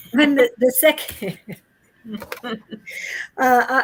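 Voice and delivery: speaking through laughter. Presenting numbered cards and apologizing mid-sentence: laughing while talking. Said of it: "I'm laughing for other reasons".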